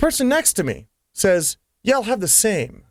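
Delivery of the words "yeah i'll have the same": put-on German accent. Retelling a bar order, the person next to the speaker orders too, German accent. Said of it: "In a German accent".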